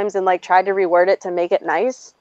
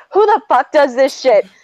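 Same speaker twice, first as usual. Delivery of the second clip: put-on high-pitched screaming outburst; 6 semitones higher, 4 dB louder than usual. Retelling an argument about a boss, imitating own past screaming.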